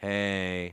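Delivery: very dry, nasal hey. Showing how someone greets a person who walks in: very dry, nasal hey. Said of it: "I would say it very dry and very nasally like that".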